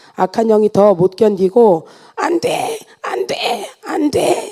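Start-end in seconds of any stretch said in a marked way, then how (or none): 2.1-4.5 frantic, struggling, high, soft, broken crying wail. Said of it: "이렇게 발악을 하며".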